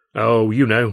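light, casual, breezy tone. Caught leaving by a man in the doorway, answering breezily. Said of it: "I said breezily".

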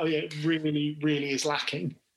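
ordinary talk, nothing marked

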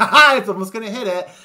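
mock, very loud, giddy, gleeful laugh-through delivery. Describing viewers getting excited as a slow-motion disaster unfolds: imitating people laughing. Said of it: "they're laughing like".

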